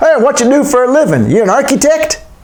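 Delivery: put-on dopey Texan accent, pitched very high. Retelling an American man's question to the woman beside him, in a stupid Texan accent. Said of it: "I'm going to do a stupid Texan accent".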